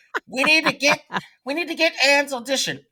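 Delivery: acted shrill, very high screaming. Retelling how an agent demanded an actor's audition: imitating an agent screaming. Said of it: "I had the agent screaming".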